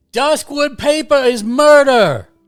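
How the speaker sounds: Cockney scream. Voicing a wood elf character for the party, screaming in a Cockney accent. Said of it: "Cockney accent?".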